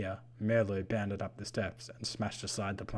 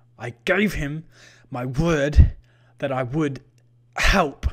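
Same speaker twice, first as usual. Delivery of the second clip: very loud, high, gasping out the words; 6 semitones higher, 15 dB louder than usual. Lighten answers the Vampanese who offers to spare him, gasped words. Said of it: "Lighten gasped".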